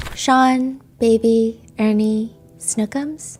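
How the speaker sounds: light, dainty, delicate voice. Retelling a trial, the speaker voices Jane answering a question about nicknames: Jane's soft, dainty voice. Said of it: "she's got a really soft, dainty voice".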